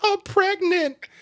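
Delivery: very high-pitched sobbing, crying words. Describing how a recording starts, imitating a girl crying. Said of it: "And she's still crying".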